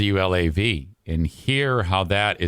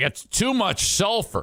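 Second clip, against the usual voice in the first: complaining devilish voice, pitched up; 12 semitones higher than usual. Acting out Satan complaining about too much sulfur: Satan voice. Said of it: "Satan himself would be like".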